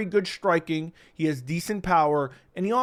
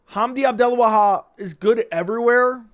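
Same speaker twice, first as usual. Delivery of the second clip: sarcastic, high and loud, pitched up. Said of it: "I say that kind of sarcastically".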